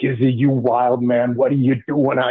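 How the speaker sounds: put-on thick Italian accent. Retelling what the special teams coach said: imitating a coach's thick Italian accent. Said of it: "he's got that thick Italian accent to him".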